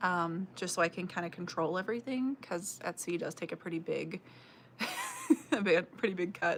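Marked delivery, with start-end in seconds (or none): 2.4-6.6 words breaking up with laughter. A content creator explaining a choice, laughing while talking. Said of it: "Sorry, I'm laughing".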